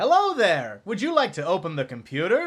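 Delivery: very, very cheerful, loud, sing-song Middle American voice. Voicing a talking computer to the players: very cheerful Middle American voice. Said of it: "the voice sounds very middle American, very, very cheerful".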